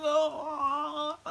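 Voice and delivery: high wail, like someone dying.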